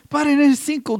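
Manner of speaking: mock drunk man's shouting voice. Retelling how a drunk fan in the stadium shouted: imitating a drunk man shouting.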